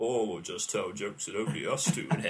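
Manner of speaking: put-on deepest voice. Retelling what the other speaker said that night: imitating someone's deepest voice. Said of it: "Someone with the deepest voice I've ever heard".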